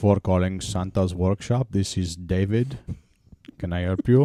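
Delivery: put-on Indian accent. Joking that santa's workshop phones go to a call center in india: indian call-center accent. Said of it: "I can't stop doing the Indian accent".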